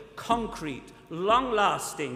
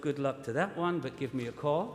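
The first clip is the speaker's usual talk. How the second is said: put-on quiet muttering under the breath; 2 semitones lower, 3 dB quieter than usual. Retelling what the speaker said to himself: imitating a quiet under-breath mutter. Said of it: "quietly under my breath".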